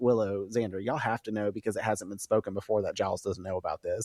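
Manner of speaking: ordinary delivery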